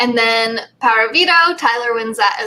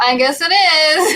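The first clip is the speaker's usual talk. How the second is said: higher, weird, taunting, mocking voice; 5 semitones higher than usual. Retelling a housemate's parting reply on the way out: imitating a weird mocking voice. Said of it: "in this weird mocking voice".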